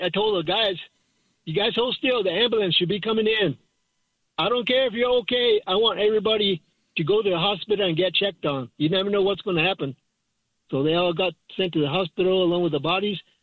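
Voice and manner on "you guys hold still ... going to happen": ordinary delivery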